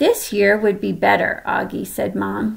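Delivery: plain reading voice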